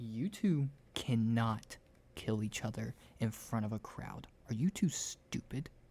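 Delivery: scolding tone in a stage whisper. Retelling a woman whispering to two people so the crowd can't hear: retelling a scolding whisper. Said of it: "she's only whispering it to you two".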